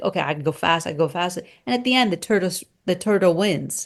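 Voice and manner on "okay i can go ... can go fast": plain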